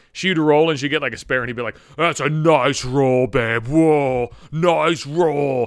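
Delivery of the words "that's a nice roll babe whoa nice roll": very slow, dopey dumb-guy drawl. Mocking how a guy praised a woman's bowling, imitating an idiot. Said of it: "he said it like a fucking idiot".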